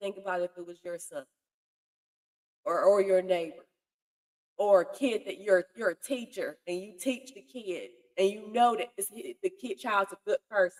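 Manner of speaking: emotional, choked up, fighting back tears. Asking listeners to imagine it was their own child, getting emotional, holding back tears. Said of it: "I'm trying not to get emotional".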